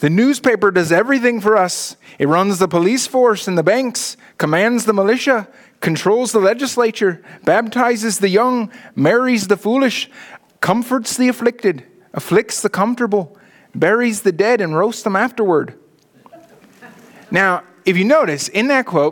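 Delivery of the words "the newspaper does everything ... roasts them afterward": well-rehearsed, practiced Irish brogue. Presenting a quote from a fictional Irishman, in a practiced Irish accent. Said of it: "I've been practicing my Irish accent for this".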